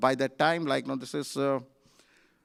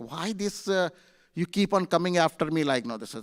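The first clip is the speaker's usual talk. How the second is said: ordinary delivery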